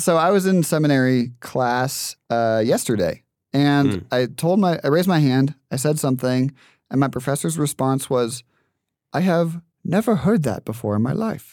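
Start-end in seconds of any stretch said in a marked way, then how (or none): 9.1-11.5 put-on Haitian-accented speech. Retelling a seminary class reply from the professor: imitating professor's Haitian accent. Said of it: "That, that impression".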